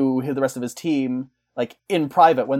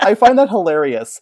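usual speaking voice

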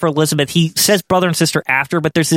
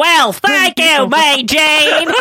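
heavy, thick, drawn-out, slow Southern drawl; 11 semitones higher than usual. Quoting her line from the show: imitating Miss Elizabeth's thick accent. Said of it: "always thick accent".

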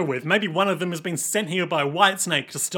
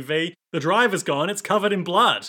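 usual speaking voice

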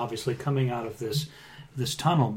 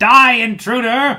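very loud, high battle-cry shout; 8 semitones higher, 11 dB louder than usual. Game master voices a figure in a cavern shouting at a player: shouting voice in Draconic. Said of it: "you hear a voice in Draconic shout".

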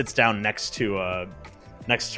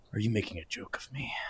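muttered under breath, quieter and faster; 7 dB quieter than usual. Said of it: "under his breath says to himself".

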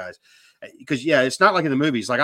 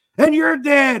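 put-on scream, higher and louder; 13 semitones higher, 6 dB louder than usual. Retelling being at the tail of an ambush, imitating Matt screaming.

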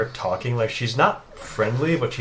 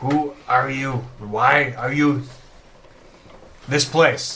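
halting, faltering, stuttering broken speech. A game narrator voices her reply to the party, stuttering in Common. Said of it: "in stuttering common".

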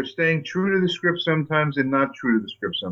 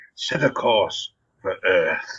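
very low, slow, put-on English villain voice; 8 semitones lower than usual. Recalling voicing the evil voice of the universe in Gatchaman: Cybertron voice, faux English, throaty. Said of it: "faux English, deep in the back of the throat".

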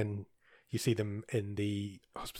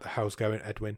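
usual speaking voice

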